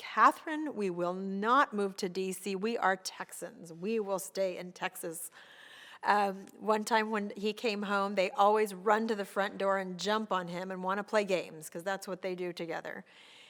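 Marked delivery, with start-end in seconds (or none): none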